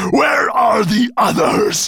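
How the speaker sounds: impatient, menacing, slow snarl, very high. A creature rearing up menacingly at two others, snarling. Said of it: "He snarled".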